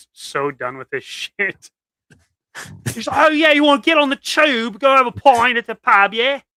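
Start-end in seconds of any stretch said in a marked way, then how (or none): 3.2-6.4 hilarious put-on British accent, pitched up. Retelling how he walked around England doing this, hilarious British accent. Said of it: "doing this like hilarious British accent".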